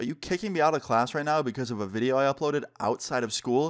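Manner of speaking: normal talking voice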